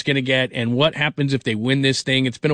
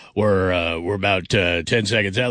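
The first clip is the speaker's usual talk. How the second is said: put-on deep voice, much lower and slower; 6 semitones lower than usual. Host praising a colleague's voice quotes him, imitating Andrew's deep voice. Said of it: "I can't get that deep".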